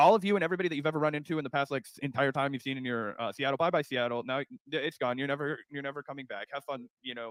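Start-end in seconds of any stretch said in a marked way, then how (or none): none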